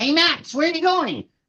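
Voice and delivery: pitched way up puppet voice. Showing the voice used for the puppet while shooting: Doctor Colosso voice. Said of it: "I pretend his voice".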